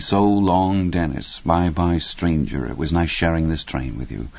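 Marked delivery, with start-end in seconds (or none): none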